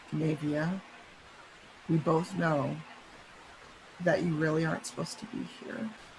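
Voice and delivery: hushed voice, very quiet. Voicing a character leaning very close to Navia: very quietly spoken. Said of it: "he says it very, very quietly".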